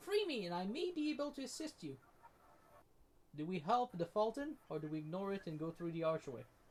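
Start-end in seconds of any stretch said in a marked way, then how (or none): 0.0-2.0 weak, feeble, very high-pitched crying voice. Game master voicing a caged fairy-like creature calling to the players, feeble and high-pitched. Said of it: "a feeble, high pitched voice calls out".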